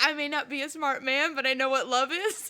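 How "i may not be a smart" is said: usual speaking voice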